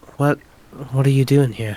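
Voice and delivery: whispering in character voice. Speaking in character to a panther in the dark forest: whispering in character. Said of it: "I wanna whisper to the panther".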